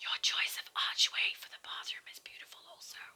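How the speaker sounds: breathy, hushed, very quiet whisper. Touring a room with another speaker and praising the archway: whispering. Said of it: "Why are we whispering?".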